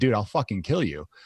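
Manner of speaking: acted, smiling, friendly-sounding menace. Retelling what they said to a guy who told them to watch their tone, smiling threat. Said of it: "I just kind of smiled like I'm smiling now".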